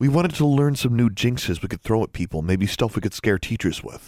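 plain

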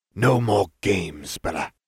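hissing, slow, each word dragged out. Malfoy answers Bellatrix after her giggling taunt, hissed. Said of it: "Malfoy hissed".

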